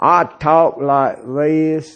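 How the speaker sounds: heavy southern drawl, low, flat monotone, no inflection. Imitating a professor the speaker once heard: thick southern accent, no inflection. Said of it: "real thick southern, I mean, southern accent is an understatement. And he had no voice inflection".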